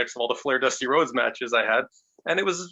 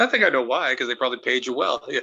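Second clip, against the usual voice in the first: ordinary delivery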